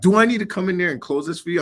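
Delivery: acted pushy, aggressive tone. Retelling a demand made in an office: imitating David aggressive. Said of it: "he's, like, aggressive".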